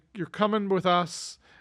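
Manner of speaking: plain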